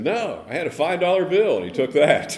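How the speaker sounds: high, loud, laughing reply.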